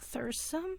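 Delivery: weak, soft, high, feeble mumble. Voicing a badly hurt character who hears her name: mumbling weakly. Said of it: "You could hear her mumble out".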